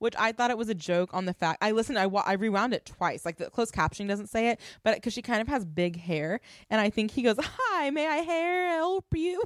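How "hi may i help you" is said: strained "help", much higher and slower. Recapping an episode, the speaker imitates Kenneth: imitating Kenneth struggling on 'help'. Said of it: "he tried to say help, but he struggled".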